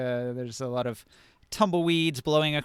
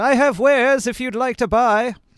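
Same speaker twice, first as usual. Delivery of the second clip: very high-pitched, loud calling-out voice; 10 semitones higher, 10 dB louder than usual. Voicing a merchant calling out to travelers off the road: merchant calling out. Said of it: "and he calls out".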